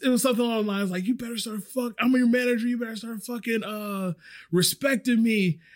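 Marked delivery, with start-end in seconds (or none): 1.0-5.5 yelling in a loud raised voice. Retelling the manager yelling while walking out of the kitchen: imitating someone yelling. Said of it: "the manager who's yelling at me".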